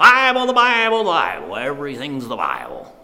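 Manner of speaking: very loud, booming repeated words, swinging pitch. Retelling what a man said after the speaker's father explained the Bible, in a loud voice. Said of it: "in his loud voice".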